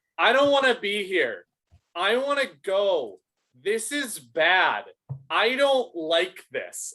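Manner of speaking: put-on child voice, yelling, drawn out and fed-up. Retelling how a kid yelled to his dad, imitating a child yelling. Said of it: "And he's just yelling over everybody".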